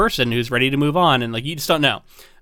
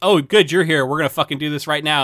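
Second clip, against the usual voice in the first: mock-confrontational, storming outburst tone. Describing a woman storming into the principal's office, retelling a confrontational outburst. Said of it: "storms into the principal's office and is like".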